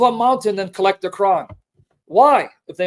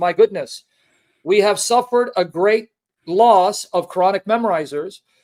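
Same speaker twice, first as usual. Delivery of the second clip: plain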